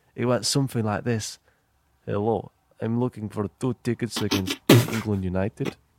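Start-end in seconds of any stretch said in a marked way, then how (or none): 2.1-5.8 put-on Ukrainian accent, a best attempt. Retelling phoning for england game tickets while putting on a ukrainian voice. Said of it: "put on my best ukrainian voice".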